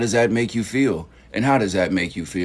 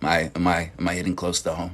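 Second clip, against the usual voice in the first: ordinary talk, nothing marked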